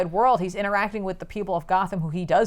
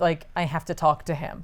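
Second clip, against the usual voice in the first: ordinary delivery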